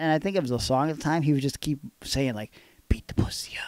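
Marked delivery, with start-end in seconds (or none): 2.9-3.7 breathy whisper muttered under the breath. Retelling how a coworker kept saying a line in a whisper: imitating a coworker whispering. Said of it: "he did it in a whisper like that?".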